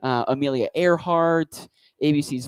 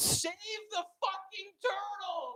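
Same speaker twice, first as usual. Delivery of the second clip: put-on high, hushed, slow, drawn-out mild yell; 16 dB quieter than usual. Retelling how a driver rolled down his window: imitating a man shouting. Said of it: "he shouts".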